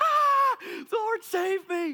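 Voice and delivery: put-on very high, very loud, drawn-out little-girl scream. Flying off after the rope is pulled, retelling own little-girl scream. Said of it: "I start screaming like my life depended on it".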